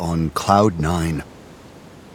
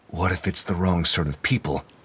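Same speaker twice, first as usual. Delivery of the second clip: ordinary delivery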